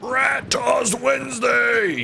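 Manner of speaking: high, slow, drawn-out announcer-like shout.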